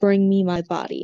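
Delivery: clear, whispered ghost voice. Voicing a ghost cat heard inside a character's head: clear ghostly whisper. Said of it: "a lot clearer, though whispered".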